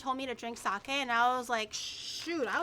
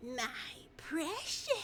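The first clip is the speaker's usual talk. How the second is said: fantasy creature voice; 8 dB quieter than usual. Showing the others a promised impression: Gollum voice. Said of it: "this is my golem impression".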